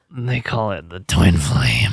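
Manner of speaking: low, spooky, ominous, scary voice. Speaker describing a couple's love to others, saying the term in a scary voice. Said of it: "said it with a scary voice".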